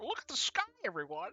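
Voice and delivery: high, birdlike creature character voice. Explaining an effect on the bird races, the speaker does a bird-person voice. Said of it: "I always wanted to do that voice".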